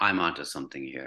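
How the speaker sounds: normal talking voice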